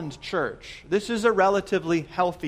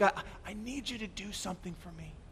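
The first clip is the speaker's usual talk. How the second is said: mock-weak dying voice, much quieter and slower; 13 dB quieter than usual. Retelling a story, the dying hero speaks to the gathered villagers: imitating a weak dying voice. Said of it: "And he weakly says".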